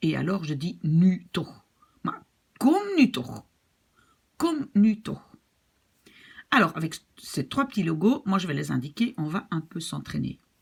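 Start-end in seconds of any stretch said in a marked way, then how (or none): 2.6-5.2 very angry, furious, pitched-up delivery. A language teacher demonstrates the angriest way to say a phrase, furious. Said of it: "je suis furieuse".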